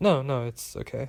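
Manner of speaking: plain reading voice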